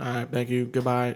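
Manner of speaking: imitated, flat, toneless monotone delivery. Imitating people on antidepressant medicine, in a flat monotone. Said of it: "like monotone".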